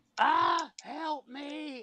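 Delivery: very high, guttural scream breaking into crying. Speaker retelling a woman's sudden outburst during an allergic reaction, retelling a screaming cry. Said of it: "she screams out and is crying".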